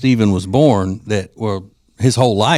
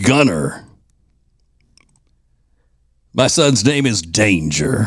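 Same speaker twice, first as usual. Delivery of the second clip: big, larger-than-life announcer-guy voice. Host reads out aggressive baby name examples: big voice guy voice. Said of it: "I had to read them in the big voice guy voice".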